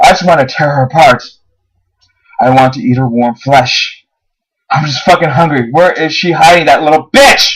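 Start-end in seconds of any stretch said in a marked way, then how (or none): none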